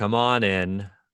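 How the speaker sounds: effortful, labored, unhurried delivery with no urgency. A character calls someone in before opening the door, labored and unhurried. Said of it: "kind of almost like a like a labored sound".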